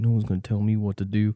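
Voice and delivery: quiet, hushed, half-swallowed mumbling. Imitating a man from a video in a store: imitating quiet talking. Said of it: "he's talking real quiet".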